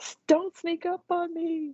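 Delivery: high, startled, rattled scolding blurt.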